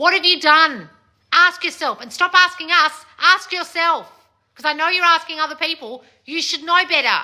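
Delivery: scolding tone. Telling listeners to ask themselves what they did wrong: yelling at them. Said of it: "I'm yelling at you".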